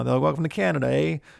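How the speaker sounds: terrible fake Canadian accent. Describing how people in Vancouver and Montreal talk, doing a bad Canadian accent. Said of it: "I'm terrible with accents".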